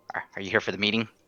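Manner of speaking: whispering. Acting a character's message sent through a magic ball: whispering.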